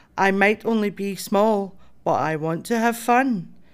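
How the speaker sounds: plain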